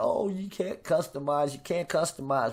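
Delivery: normal talking voice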